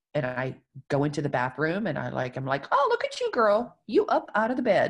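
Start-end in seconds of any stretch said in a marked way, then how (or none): 2.7-4.9 play-acted cheerful, happy, sing-song voice. Retelling celebrating small wins out loud to oneself: imitating own happy self-praise. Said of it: "saying it out loud in a happy voice".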